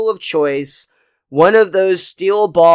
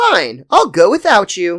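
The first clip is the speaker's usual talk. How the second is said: play-acted drippingly obvious, pointed tone, swooping pitch; 2 semitones higher than usual. Retelling a scene where Marge says she'll go without him: imitating Marge's pointed tone. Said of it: "the tone in Marge's voice that is drippingly obvious".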